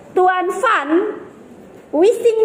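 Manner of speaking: name split with a pause after first part. Explaining how a break falls inside a name: pause between Van and Wising. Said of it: "pemenggalan Jordan itu jatuh pada nama orang".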